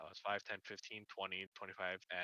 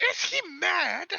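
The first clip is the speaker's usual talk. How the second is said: shrill, very high, loud shriek; 12 dB louder than usual. Voicing the character Leva in a fight: Leva shrieking. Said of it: "Leva literally shrieks".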